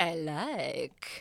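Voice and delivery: vague put-on, loosely continental European accent. Reading a scene, copying another character's accent: vague european accent. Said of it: "Copying Michelle's vague European accent".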